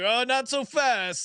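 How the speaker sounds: drawn-out, very slow, needling, teasing tone. Retelling how the other speaker teased them: imitating a teasing retort. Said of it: "you were giving me shit like".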